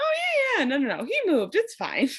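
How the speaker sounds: high, breezy, casual, offhand dismissive tone. Retelling what some guys said about someone moving, imitating a casual tone. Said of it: "they were saying it so casually".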